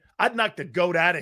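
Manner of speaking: usual speaking voice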